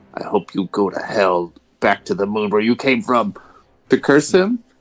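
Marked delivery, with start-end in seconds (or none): 0.2-3.4 muttering under his breath. Playing a character cursing an enemy archer: cursing under his breath. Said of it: "curse under my breath".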